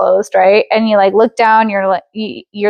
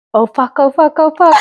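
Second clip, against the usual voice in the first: mock frantic sudden panic, high-pitched, repeated; 6 semitones higher than usual. Imagining someone standing by the car window: acting out panic. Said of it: "I would panic".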